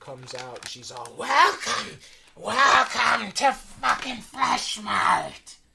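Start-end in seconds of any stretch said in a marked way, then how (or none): 1.2-5.6 put-on hag voice, very loud, shrill, drawn out. Voicing a hag in a bloody apron welcoming the players: hag voice. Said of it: "fucking hag in just a bloody apron".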